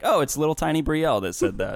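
ordinary talk, nothing marked

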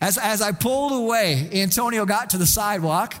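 normal talking voice

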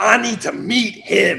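broad, drawn-out delivery. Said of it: "his [name] voice".

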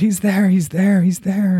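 very high voice, calling out repeatedly. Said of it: "as I'm shouting his name".

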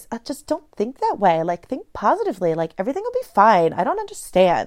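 put-on, swooping Valley Girl accent. Recalling their own naive younger self's advice to struggling people, in a valley girl voice. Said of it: "let's do my best Valley Girl voice".

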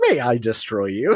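very polite robot voice. Joking about a misread show title: very polite robot voice. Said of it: "a very polite, like, robot".

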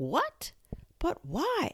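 stunned, shocked, very high-pitched voice. After the Rabbit whispers news in her ear, Alice asks, shocked. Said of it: "asked Alice, shocked".

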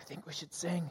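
barely-there, very soft, hushed whisper. Retelling a tense standoff, quoting another person: imitating a whisper. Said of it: "Ed whispers".

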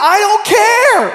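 put-on very high, furious, shrill, care drawn out. Retelling what the speaker said back to their sister, retelling an angry retort. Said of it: "I was so mad".

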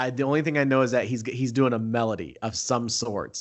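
usual speaking voice

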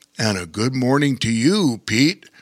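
put-on character voice in a baritone register. Reading a story aloud, Bear King greets Pete, in his baritone voice. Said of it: "said Bear King in his baritone voice".

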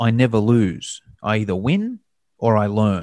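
ordinary talk, nothing marked

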